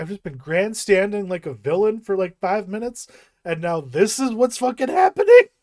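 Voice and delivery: loud, high, indignant, incredulous outburst. Retelling a film scene where the character is caught out: imitating indignant William Hurt. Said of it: "he's just indignant".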